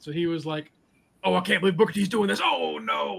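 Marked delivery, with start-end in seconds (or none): 1.2-3.2 rough, creaky ringside commentator voice. Retelling a wrestler commentating his own fight in third person: imitating Booker T's commentary voice. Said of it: "he was doing it in third person".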